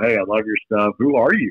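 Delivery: ordinary delivery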